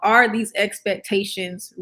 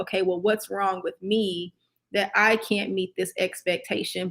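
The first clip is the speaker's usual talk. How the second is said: ordinary delivery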